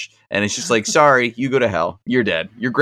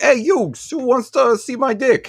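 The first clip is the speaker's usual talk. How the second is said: put-on very high-pitched voice with Brooklyn accent; 12 semitones higher than usual. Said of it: "And Joey's just like".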